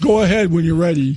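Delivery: put-on flat, plain, unexcited service-voice monotone. Retelling the reply heard after saying no: imitating an unexcited voice. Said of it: "the normal, unexcited voice".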